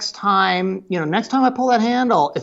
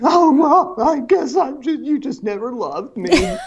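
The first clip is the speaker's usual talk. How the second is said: put-on complaining child voice, much higher pitch; 7 semitones higher than usual. Acting out the kids' complaint to a parent, mimicking a complaining kid. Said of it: "every time the kids argue and complain".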